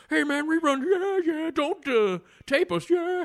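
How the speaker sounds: stretched out high and loud. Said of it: "that's how he really talks".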